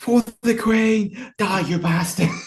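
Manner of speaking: high, screamed, charging battle cry. Voicing a character charging at an enemy while firing: screaming while charging. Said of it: "running, screaming, shouting".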